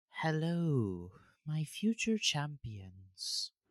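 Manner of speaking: slow, drawn-out goddess voice. Voicing a goddess who appears to the party: voicing a goddess. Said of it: "suddenly you hear a voice".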